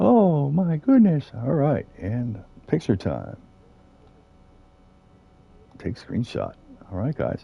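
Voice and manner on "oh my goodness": high, loud, thrilled voice, blurted out. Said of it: "He's like".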